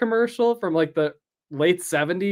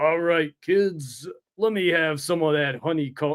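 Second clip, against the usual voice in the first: put-on New York accent, comic-book style; 3 semitones lower than usual. Describing a version of Hulk and quoting his line, Hulk's New York accent. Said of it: "Hulk has like a Jack Kirby style like New York accent".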